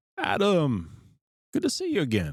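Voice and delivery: vague put-on European accent. Imagining locals in the czech greeting a returning visitor, in a generic european accent. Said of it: "Is that generic European voice?".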